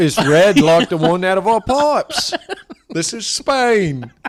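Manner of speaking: put-on slow, weird British accent. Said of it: "a weird British accent".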